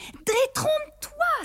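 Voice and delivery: very high, disdainful, scornful outcry. Reading a story, Rosemary contradicts Joseph, a disdainful exclamation. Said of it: "s'écria Rosemary dédaigneuse".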